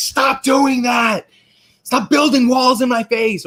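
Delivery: very high, slow, stretched-out, frustrated scream.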